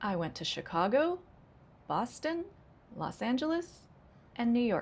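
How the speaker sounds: list intonation, rising on each item, final fall on New York. Demonstrating intonation patterns with example sentences: list intonation, rising then falling. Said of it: "Rising, rising, rising, falling".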